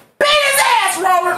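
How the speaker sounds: mock, high, egging-on screaming encouragement. Retelling what was yelled at work: retelling own screaming. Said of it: "I'm screaming".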